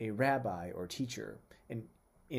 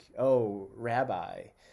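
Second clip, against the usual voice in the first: loud, mocking, tongue-in-cheek sarcastic tone; 7 dB louder than usual. Describing how some people addressed Jesus, imitating mocking sarcasm. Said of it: "they might say kind of mockingly, sarcastic".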